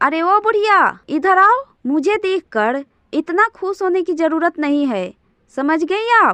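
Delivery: rude, insolent, disrespectful scolding tone. Playing a daughter-in-law ordering her mother-in-law over: shouting rudely. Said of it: "ऐसे क्यों चिल्ला रही हो?".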